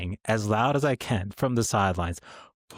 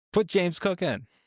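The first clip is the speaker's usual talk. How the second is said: put-on, high-pitched, hollered yell; 8 semitones higher than usual. Retelling yelling toward the field during a game: retelling own yell. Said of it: "I was the dude behind James Cook yelling".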